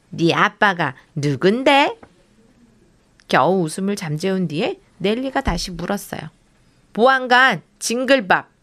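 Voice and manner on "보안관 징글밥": proud voice, higher pitch. Asked by a villain who her father is, a child answers proudly. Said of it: "재미나는 자랑스럽게".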